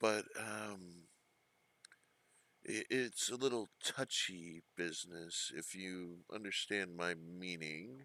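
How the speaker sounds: discreet, confiding half-whisper, very soft. Voicing a character who hints at touchy business: half-whispering in character. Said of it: "and in a whisper says".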